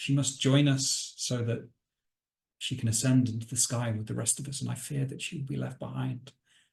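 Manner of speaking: softly spoken, tinged with sadness, sorrowful. Game master voicing a woman pleading with a player about her daughter, soft and sad. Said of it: "she just says to you softly and with a little bit of sadness".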